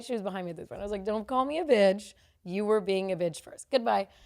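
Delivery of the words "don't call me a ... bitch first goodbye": normal talking voice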